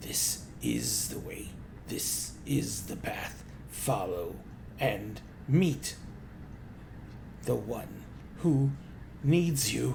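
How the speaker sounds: slow, croaking, hiss-like whisper. Telling the group how a propped-up head speaks as they approach, almost hiss-like voice. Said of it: "this almost hiss-like voice".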